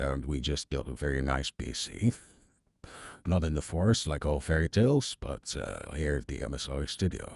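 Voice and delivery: very low, hushed, soft narrator voice. Demonstrating a voice effect on a stream, Morgan Freeman narrator voice. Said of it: "should sound a little bit like a narrator".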